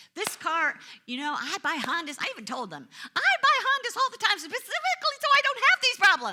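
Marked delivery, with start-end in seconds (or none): 3.1-6.3 shrill, very loud, high whiny complaining. Retelling telling the repair shop about buying Hondas: imitating own complaining tone. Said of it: "Just in that tone of voice".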